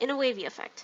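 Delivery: plain reading voice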